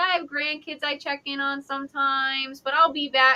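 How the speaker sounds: soft, breezy, offhand, easygoing casual tone. Retelling what a ghost told the group, imitating Sue's casual tone. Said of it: "like just casual".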